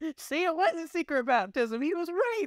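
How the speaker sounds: very high, mock teasing voice.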